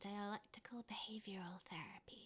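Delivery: hushed, very quiet, soft ASMR delivery. Answering when asked what DBT stands for, in an ASMR voice. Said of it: "she did it in an A S M R voice".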